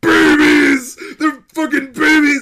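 put-on furious, very high, swooping, drawn-out angry yell. Retelling a character kicking open the door: imitating an angry yell. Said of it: "He's so angry".

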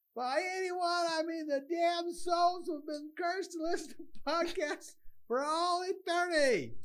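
very high, mic-blasting yelling into the mic. Yelling into the microphone so the levels can be turned down: yelling. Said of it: "I'm gonna yell into the microphone".

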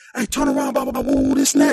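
play-acted cop voice, screaming hard and forceful. Retelling how a cop ordered him to turn around: imitating a cop screaming. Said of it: "just screaming".

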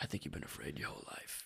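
hushed, almost whispered, breathy movie-hero style. Quoting a film scene where Maximus answers Commodus: Maximus impression. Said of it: "It's a pretty good impression".

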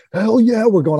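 play-acted fired-up, gleeful, excited scream, high-pitched. Retelling his answer when asked about going back in again, retelling a scream. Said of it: "I'm screaming".

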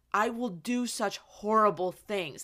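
acted cracking, emotional voice. Retelling a scene where he falls to his knees: imitating Anakin's broken voice. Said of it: "And his voice is so broken".

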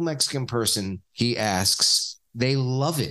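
plain

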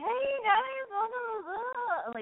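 very high, forced, fake-bright cheerful voice. Speaker describes opening Boy Crazy Radio when not in the mood, with mock forced enthusiasm. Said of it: "sometimes it's very forced and fake".

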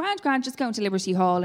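usual speaking voice

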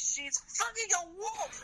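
mock yelling, high and slow.

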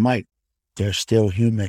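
low whisper. Leaning in to tell Mike something during a sports talk: whispering. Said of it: "I'm gonna lean in and whisper".

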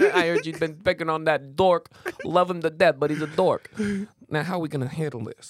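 tough-guy mob boss voice. Pretending to be his own brother confronting a tow driver: Sopranos voice. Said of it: "Is that like your Sopranos?".

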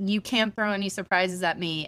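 ordinary talk

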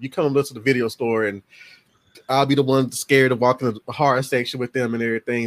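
ordinary delivery

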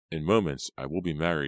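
ordinary delivery, nothing marked

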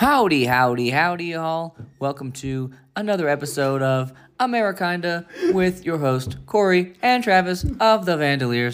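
very slow, high, mechanical robot voice. Podcast host opening another episode of Amerikinda, in a robot voice. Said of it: "I don't know why I talk like a robot for that".

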